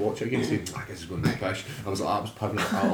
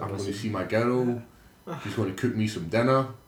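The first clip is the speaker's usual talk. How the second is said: ordinary talk, nothing marked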